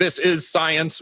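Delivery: high, robotic machine voice. Characterizing a science-only approach to eating: robot voice. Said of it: "robot voice".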